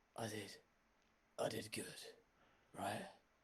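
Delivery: soft, indistinct, half-swallowed mumble under the breath. Voicing a character speaking in front of a player, mumbling. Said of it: "you hear him kind of like mumbling".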